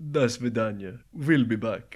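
loud, booming vampire count voice. Signing off the podcast, Count from Sesame Street voice. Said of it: "that was like the Count from Sesame Street".

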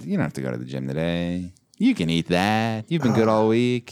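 little fat cherub's voice. Describing the Blurch, a little fat cherub from The Oatmeal: Blurch voice. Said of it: "That's that little bastard that".

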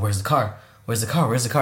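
mock heated, impatient, fast, angry demanding. Retelling a film scene where a man can't find the getaway car, retelling an angry outburst. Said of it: "And he's super angry".

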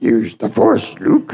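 little alien sage voice, puppet-like. Describing a Star Wars scene, the speaker quotes the line in Yoda voice. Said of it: "there's Yoda going".

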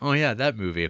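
normal talking voice

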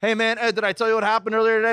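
put-on drunk speech. Retelling what he does when drunk in a loud bar: imitating his drunk self. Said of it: "when I get drunk or when I'm in the loud bar".

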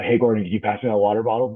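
excited, eager, all worked up voice. Retelling how the listener asks for a water bottle: imitating someone excited. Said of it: "you get all excited and you walk around".

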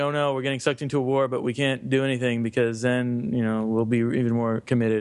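normal talking voice

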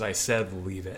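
ordinary delivery

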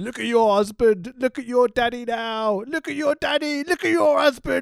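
high-pitched goading, jeering taunt. Retelling a wrestling beatdown, imitating a wrestler taunting. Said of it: "He's like".

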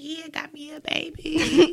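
put-on very slow, drawn-out, excited little girl voice. Retelling a little daughter at the register, imitating her excited voice. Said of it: "Her little daughter's so excited".

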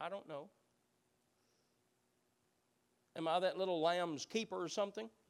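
snide, purely sarcastic tone. Acting out an answer to the Lord's question: acting out Cain's sarcasm. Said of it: "answers the Lord with pure sarcasm".

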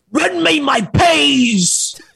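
put-on pirate-style English accent. Calling out to a friend, in a piratey english accent. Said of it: "You sound piratey when you do your English".

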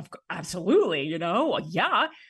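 loud, eager, overjoyed, gushing delivery.

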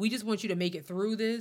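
usual speaking voice

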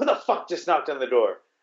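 mock, attitude-filled put-on tone. Retelling a confrontation at a bathroom door, acting out a girl's attitude. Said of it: "comes out with like an attitude".

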